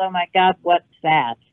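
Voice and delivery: ordinary talk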